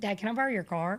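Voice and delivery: put-on Southern accent with a drawl. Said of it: "you sound so Southern right now".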